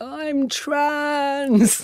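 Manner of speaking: acted teary, high-pitched speech. Retelling a confession to the wife on the kitchen floor, imitating a tearful confession. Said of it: "looked up with these tears and I was like".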